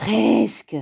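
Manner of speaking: with a sigh. Reading a children's story aloud, Grand Ours answers Petit Ours, sighing. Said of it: "Soupira Grand Ours".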